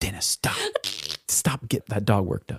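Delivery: whispered, breathy, motherly scolding tone. Retelling how mom told the dad to stop: imitating mom. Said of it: "my mom would always be like".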